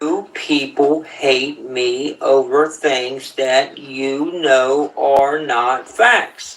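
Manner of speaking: slow, deliberate delivery. Addressing people who hate the speaker over things that aren't facts, speaking slowly. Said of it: "I'm gonna say this slowly".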